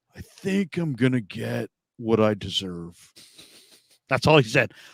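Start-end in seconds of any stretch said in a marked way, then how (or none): 0.2-3.0 slow, deliberate delivery with a knowing tone. Retelling a player's answer about his contract: Nick Bosa monotone voice. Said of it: "in Nick Bosa monotone voice is like".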